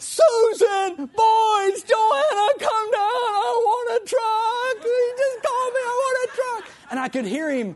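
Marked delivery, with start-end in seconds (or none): 0.0-6.7 put-on loud shriek, very drawn out, "boys" stretched. Retelling calling the family down after the phone call: imitating own screaming. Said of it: "I was screaming".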